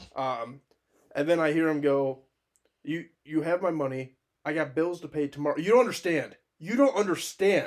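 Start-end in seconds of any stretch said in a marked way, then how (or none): 2.8-7.7 mock, held-in, hinted mild yelling in a man's manner. Retelling a man overheard on the phone in a store: imitating a man yelling. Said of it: "And he's yelling".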